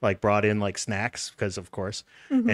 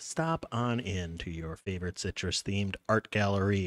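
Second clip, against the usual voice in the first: robot-like voice, quieter; 7 dB quieter than usual. A podcast host reads the sponsor message in a robotic voice. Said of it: "I am saying this like a robot today".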